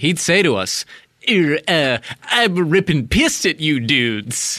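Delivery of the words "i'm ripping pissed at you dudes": halting, stumbling celebrity voice. Imitating Woody Allen telling the hosts he's furious: Woody Allen impression. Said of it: "I don't do the best impression, but I do a good one".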